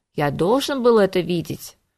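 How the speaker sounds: plain reading voice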